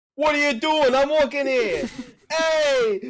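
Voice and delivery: put-on very loud, very high orc voice, Brooklyn accent. Acting out an orc who walks in: orc with brooklyn accent. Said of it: "an orc with a frickin', like, Brooklyn accent".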